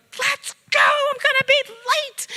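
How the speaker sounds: very high, very loud, drawn-out scream. Giving advice on rushed school mornings, recalling past mornings: retelling screaming at kids. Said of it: "I still remember screaming at my kids".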